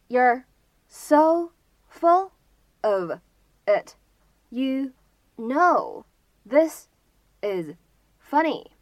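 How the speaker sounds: very slow, one word at a time with pauses.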